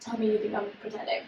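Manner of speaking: flat, quiet delivery.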